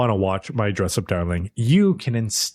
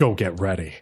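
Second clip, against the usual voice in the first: low, dead serious tone. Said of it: "super serious".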